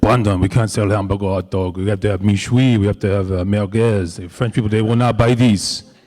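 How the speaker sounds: put-on French accent with broken English. Retelling a fundraiser talk, quoting Nico Osterman in a put-on French accent. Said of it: "I'm do my best French accent here".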